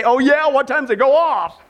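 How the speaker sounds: put-on sarcastic, wisecracking tone. Acting out a husband's reply to his wife: imitating a sarcastic husband. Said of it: "you're gonna be tempted to say".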